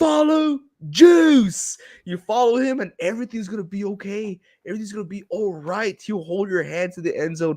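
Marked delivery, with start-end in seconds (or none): 0.0-1.8 scream, higher and louder. Retelling what gets yelled at the TV during a game: imitating own screaming at TV. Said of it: "just know I am screaming, screaming at the T V".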